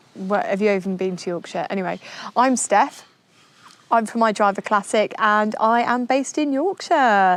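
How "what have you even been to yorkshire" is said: ordinary delivery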